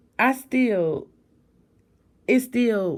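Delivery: voice cracking progressively, with swooping pitch. Closing a chapter covering someone they loved, speaking to listeners: voice cracking. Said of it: "y'all can hear my voice cracking".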